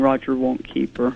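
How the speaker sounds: plain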